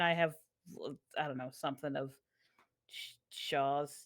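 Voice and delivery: ordinary talk, nothing marked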